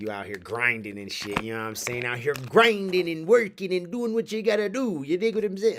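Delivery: crazy put-on voice.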